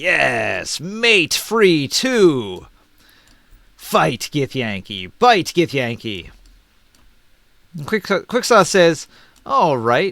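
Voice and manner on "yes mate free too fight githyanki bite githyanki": slow, lumbering, drawn-out beast creature voice. Voicing the owlbear's reply to Quicksoth, owlbear voice. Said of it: "And the owlbear will reply".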